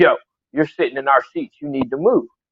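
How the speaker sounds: mock hostile, aggressive, in-your-face confrontational tone. Retelling what a stranger said about their seats: imitating an aggressive tone. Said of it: "the aggression and the tone in his voice".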